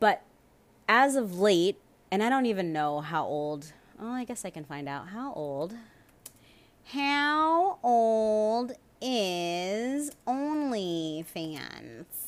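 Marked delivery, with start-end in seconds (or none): 6.8-12.0 very slow, stretched, drawn-out witchy drawl. Asking a question aloud for a search, sounding like a witch. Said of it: "Why do I sound like a witch?".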